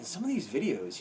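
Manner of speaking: ordinary talk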